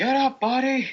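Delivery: shrill, very loud, high-pitched yell. Acting a character who calls to a downed companion: yelling in character. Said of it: "I yelled at him".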